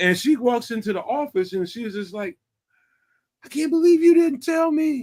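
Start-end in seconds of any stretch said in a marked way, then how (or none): 3.4-5.0 put-on shrill, very high hollering yell. Retelling how a woman came into the office at him, imitating her yelling. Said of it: "Start hollering and yelling at me".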